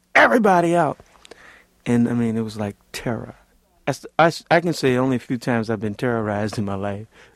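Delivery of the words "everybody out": high, loud screaming and yelling. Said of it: "they started screaming and yelling".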